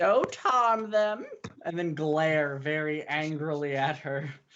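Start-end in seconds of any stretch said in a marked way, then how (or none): 0.0-1.2 put-on elderly woman's voice. Cat walks up to Toddle and speaks to her: old lady voice. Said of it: "go in the old lady's voice".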